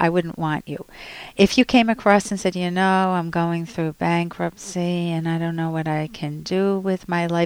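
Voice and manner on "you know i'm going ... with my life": dejected, hopeless, given-up defeated tone. Showing how not to sound to an employer: hopeless, defeated tone. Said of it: "Can you hear the tone in my voice?".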